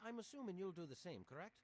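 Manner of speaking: put-on vague Celtic accent. Recognising a grown-up visitor, talking about the visitor's father: Celtic-sounding accent. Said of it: "What's that accent supposed to be?".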